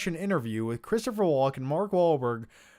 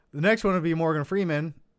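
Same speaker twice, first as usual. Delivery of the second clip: normal talking voice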